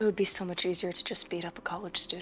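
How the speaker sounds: muttered quietly under her breath. Voicing a character reading down a list: muttered under her breath. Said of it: "in character, under her breath".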